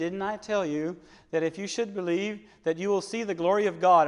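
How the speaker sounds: ordinary talk, nothing marked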